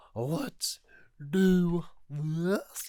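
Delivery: loud hyped voice cracking up high. Retelling a wrestler grabbing the mic in the ring: imitating Brock Lesnar's voice cracking. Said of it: "his voice just cracks".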